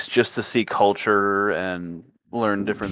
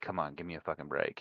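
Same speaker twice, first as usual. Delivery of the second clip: muttering quietly, lower and quieter; 4 semitones lower, 15 dB quieter than usual. Playing a character who bows respectfully while being jeered: muttered under the breath. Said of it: "all under my breath".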